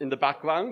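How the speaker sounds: plain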